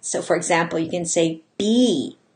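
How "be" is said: first word be leaned on with heavy stress. Showing how to say the phrase with a different stressed word: stress on 'be'. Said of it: "emphasize a different word each time".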